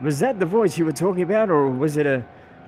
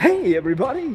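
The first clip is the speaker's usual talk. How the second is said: strained, raised-pitch, constipated radio-announcer voice; 7 semitones higher than usual. Mocking how radio announcers all sound: constipated radio-announcer voice. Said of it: "the constipated radio voice".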